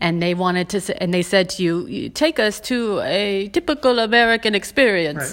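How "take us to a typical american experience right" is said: vague, really bad put-on European accent. Voicing a visitor from Europe in a hypothetical, a really bad European accent. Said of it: "i'm using a really bad european like accent".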